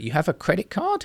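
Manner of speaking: questioning lilt climbing on "card". Example of rising intonation for questions, rising tone at end. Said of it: "modulate the end of their voice in a in a in a kind of rising tone to ask questions or express surprise".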